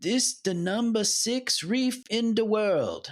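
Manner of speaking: clumsy put-on Jamaican accent. Retelling what the guy said out at the reef, bad jamaican accent. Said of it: "now this is bad Jamaican accent".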